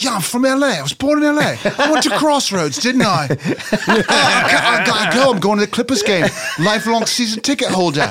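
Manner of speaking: exaggerated bad English accent. Doing a bit about Statham claiming to be from L.A.: bad Statham English accent. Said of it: "Statham's accent is so bad. He's like".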